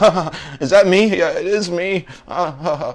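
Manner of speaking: mock very high, slow, nervous laughing titter. Calling out someone about a man's reaction on air, mocking a nervous laugh. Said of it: "you nervously laughed".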